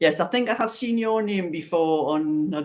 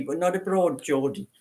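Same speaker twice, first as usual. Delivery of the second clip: plain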